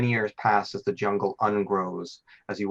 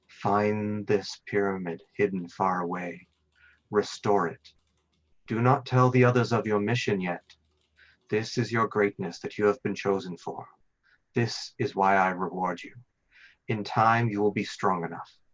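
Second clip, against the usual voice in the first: whispering otherworldly voice. Voicing a patron who speaks to a dreamer: patron whispering. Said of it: "The voice of your patron whispers to you".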